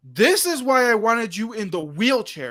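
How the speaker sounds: angry, fed-up voice. Retelling how a man giving directions came back angry, imitating an angry man. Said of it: "he's all pissed".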